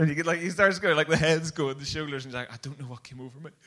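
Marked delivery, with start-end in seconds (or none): 2.5-3.5 put-on sobbing, crying voice, quieter. Retelling how a guy turned to his mates and started crying, imitating someone crying. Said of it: "He just cries his lamps out".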